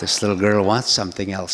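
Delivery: normal talking voice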